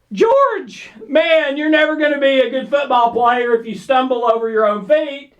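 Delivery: playful, good-natured ribbing. Retelling what you say to a man who tripped and fell: retelling a lighthearted tease. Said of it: "say it with a good tone of voice and lighthearted".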